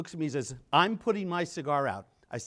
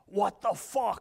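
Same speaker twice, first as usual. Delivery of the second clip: rough, raspy voice, pitched up; 5 semitones higher than usual. Retelling a phone call, the speaker quotes Elio in his raspy voice. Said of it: "His raspy voice".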